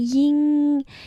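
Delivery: ying held high and flat, first tone. Pronouncing a name tone by tone, high level first tone on Ying. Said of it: "The first tone just like Ying".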